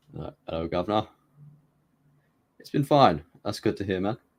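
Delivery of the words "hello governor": mock British accent, quieter. Greeting a chat viewer, showing how british people say hello: put-on british accent. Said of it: "That's how the British people say hello".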